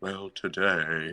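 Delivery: put-on flat monotone radio anchor voice. Imitating an NPR anchor: monotone NPR anchor voice. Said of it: "the monotone".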